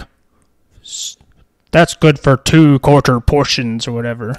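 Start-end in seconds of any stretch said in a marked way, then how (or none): 0.8-3.8 slow, drawn-out, put-on grumpy alien dealer voice. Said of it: "the guy who's like".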